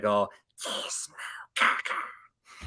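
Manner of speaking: breathy, whispered, taunting gremlin voice. Retelling how the gremlins went after Gizmo: imitating the gremlins. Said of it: "just being like".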